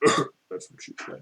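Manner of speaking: put-on tipsy, drunken whispered mutter under the breath. Game master voicing Rudd's aside during the scene, drunken mutter under breath. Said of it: "say under under his drunken breath".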